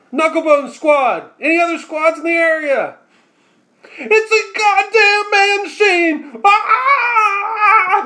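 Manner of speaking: shrill, high, panicked scream with drawn-out "ah". Voicing a squad calling over the comms for help: screaming over the comms. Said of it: "You know you don't actually have to scream".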